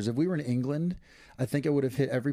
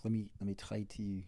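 bad French accent sounding Scottish, lower and quieter; 4 semitones lower, 10 dB quieter than usual. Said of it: "now you're Scottish".

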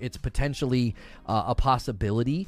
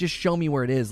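usual speaking voice

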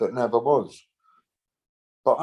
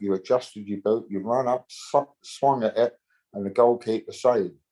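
plain

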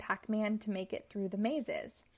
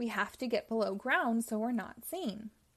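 ordinary delivery

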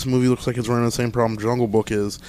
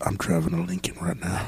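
put-on movie star drawl, lower and quieter; 5 semitones lower, 10 dB quieter than usual. Answering a request for an impression, voicing Matthew McConaughey's thoughts. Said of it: "his thought right now where he's like".

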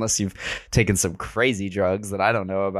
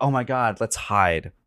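put-on unemphatic, non-emphatic delivery. Recapping a show, quoting Millie's line in a mimicked non-emphatic tone. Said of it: "In the most like non-emphatic tone ever".

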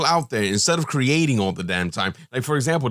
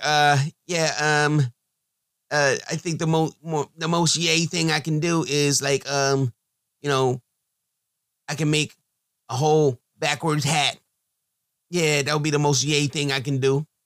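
stumbling, halting delivery with lots of ums. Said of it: "my, uh, [name] impression".

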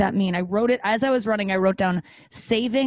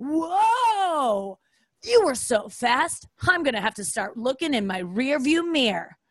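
mock patronizing, condescending tone with drawn-out whoa; 4 semitones higher than usual. Retelling what the running app says after a run: imitating a condescending coach. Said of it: "Or it'll be super condescending".

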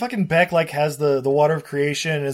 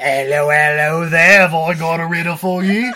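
put-on raised voice with Cockney East London accent; 6 dB louder than usual. Joking about a movie's Sphinx; Sphinx's Cockney accent. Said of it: "why does the Sphinx have a Cockney accent?".

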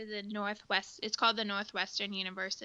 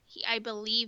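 ordinary talk

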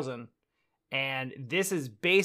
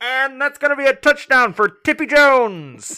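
very high, very loud, booming vintage radio announcer voice; 10 semitones higher, 11 dB louder than usual. Answering a wish for old radio voices, in an old-time radio announcer voice. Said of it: "do the old time radio voices".

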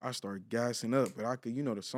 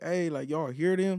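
mock loud, raised, shouted yell; 7 semitones higher, 5 dB louder than usual. Telling a story about hearing a viral video, retelling a yell at the homies. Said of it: "I started yelling at the homies".

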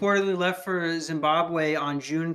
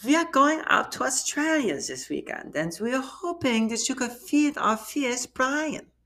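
put-on German accent, pitched up; 8 semitones higher than usual. Speaker deliberately switches into a german accent mid-message: german accent. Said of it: "I got to get in the German accent".

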